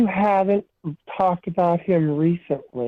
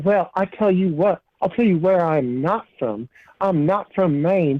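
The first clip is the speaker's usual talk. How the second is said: fake, put-on Southern US accent. Answering where in the South they're from: put-on southern accent. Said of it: "you have a lovely accent".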